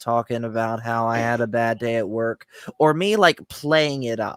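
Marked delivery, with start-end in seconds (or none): 0.0-2.5 droning, flat, unvaried monotone delivery. Demonstrating the unfunny way to tell a story, talking monotone. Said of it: "Me just talking monotone like this".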